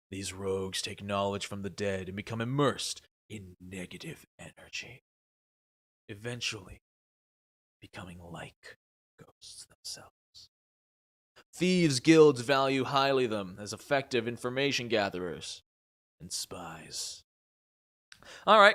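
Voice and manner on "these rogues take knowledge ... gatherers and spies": very deep, over-the-top edgelord voice. Reading a rogue subclass description aloud in the most edgelord voice ever. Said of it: "in my most edgelord voice ever".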